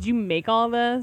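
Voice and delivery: condescending, patronizing tone. Acting out a customer questioning a maker at a show: imitating a condescending customer. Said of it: "condescendingly be like".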